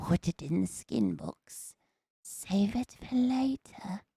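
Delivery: put-on very slow, eerie small-child voice. Quoting a movie line, creepy little kid's voice. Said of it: "it's just creepier if you do it in a little kid's voice".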